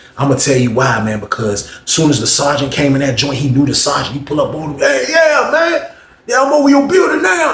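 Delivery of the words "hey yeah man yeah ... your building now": put-on crazy, very high pitched old country voice. Retelling what an inmate said to the sergeant: imitating an old crazy country voice. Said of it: "That's how he used to talk".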